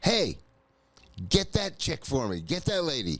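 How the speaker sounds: lively, swooping calling out. Retelling a drive, yelling to a passerby about another driver: retelling own yell. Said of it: "And I yell at him".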